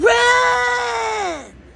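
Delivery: high, very loud scream. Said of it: "And he screams".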